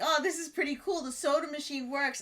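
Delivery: ordinary talk, nothing marked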